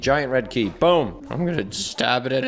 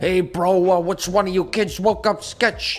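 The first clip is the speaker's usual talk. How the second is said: put-on Boston accent, spoken faster; 7 semitones higher than usual. Player reading on-screen game dialogue aloud as Sketch, Sketch impression, Boston accent. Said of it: "this is my Sketch impression. I live near Boston".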